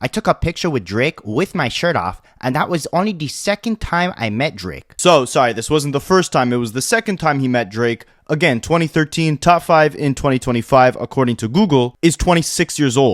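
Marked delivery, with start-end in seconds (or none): 0.0-4.9 put-on Toronto accent. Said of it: "in the best Toronto accent I possibly can".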